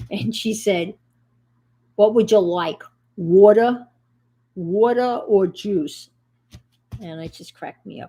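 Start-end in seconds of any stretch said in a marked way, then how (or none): 2.0-6.1 put-on heavy, laid-on, loud, thick New York accent. Retelling what a woman walking down the aisle asked, in a thick New York accent. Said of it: "really thick New York accent".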